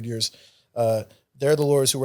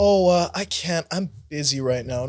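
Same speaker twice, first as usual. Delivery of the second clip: mock snotty, sarcastic, dismissive, uncooperative tone; 4 semitones higher than usual. Retelling how Bree brushed off meeting about the money owed: mock-sarcastic Bree imitation. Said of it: "In a very sarcastic, bitchy tone".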